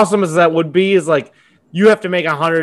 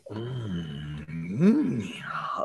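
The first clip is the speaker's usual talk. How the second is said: very low, quiet, hushed growl; 7 semitones lower, 13 dB quieter than usual. Showing the growl in the impression: Macho Man growl. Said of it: "he always does this weird growling".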